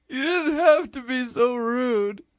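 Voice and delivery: sobbing, tearful voice, speaking through tears. Hurt by the other's insults in an argument over who is funnier, crying voice. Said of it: "Are you crying?".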